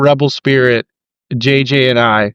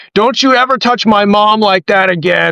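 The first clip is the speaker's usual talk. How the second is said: put-on, losing control, furious, high outburst; 7 semitones higher than usual. Retelling a match where JJ lost it at Miles Hawkins, imitating a furious outburst. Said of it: "Like she was losing it".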